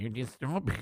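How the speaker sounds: imitated Mexican accent. Imitating a congressman's words after saying they have no audio: imitating a Mexican accent. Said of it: "I gotta work on my south of the border accent".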